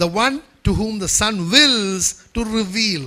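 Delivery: slow delivery with heavy stress on wills.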